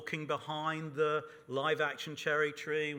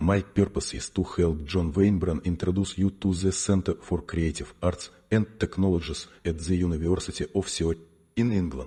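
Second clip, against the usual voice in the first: very bad Russian accent, lower and louder; 9 semitones lower, 10 dB louder than usual. Greeting a conference audience in character: very bad Russian accent. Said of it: "his very, very bad Russian accent".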